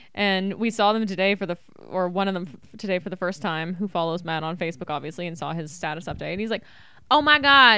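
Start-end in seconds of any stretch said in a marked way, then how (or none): 7.1-7.8 loud, high-pitched put-on Southern drawl. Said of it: "he has a Southern accent".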